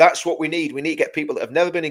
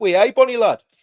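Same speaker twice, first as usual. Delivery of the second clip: loud, high, put-on Geordie accent; 7 semitones higher, 5 dB louder than usual. Speaker explaining how to talk with northern friends, in a put-on Geordie accent. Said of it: "You got to talk like that".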